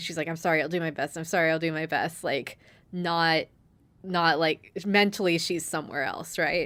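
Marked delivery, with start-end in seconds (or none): 0.3-2.2 frantic, panicked, distracted, with repeated words. Retelling an anime scene where a character apologizes: imitating a panicked character. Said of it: "still panicking".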